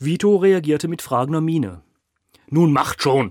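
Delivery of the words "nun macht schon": very loud, irritated hissing voice. A man to his two henchmen who botched his eulogy: hissed. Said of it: "fauchte Kiel".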